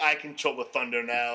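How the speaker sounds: words chuckled out while laughing. Retelling a wrestling promo, imitating Bray Wyatt laughing while talking. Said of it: "Bray Wyatt laughing, going".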